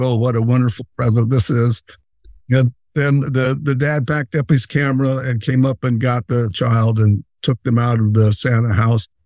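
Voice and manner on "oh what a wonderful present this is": plain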